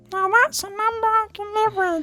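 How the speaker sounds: very high-pitched character voice. Giving in to the others' demand for an impression: Skipper impression. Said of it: "you have to do a Skipper impression".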